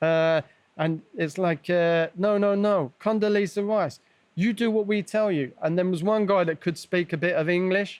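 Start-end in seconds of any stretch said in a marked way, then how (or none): 2.2-5.3 put-on screaming, shouted, higher-pitched. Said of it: "screaming at me".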